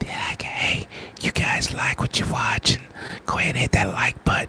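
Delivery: breathy, hushed, very quiet whisper. Speaker shows they can always whisper to the people watching: whispered. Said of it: "I can always whisper".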